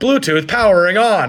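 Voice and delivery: loud, shrill, over-the-top excited announcer yell. Mocking a device's startup announcement, speaker demonstrates mock excited screaming. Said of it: "like screaming at you".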